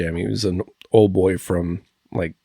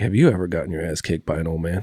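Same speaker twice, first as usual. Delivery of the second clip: play-acted dead-calm deadpan delivery, no sarcasm. Retelling what an older coworker said: imitating a calm, straight-faced line. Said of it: "very calm, very straight-faced, no sarcasm behind it".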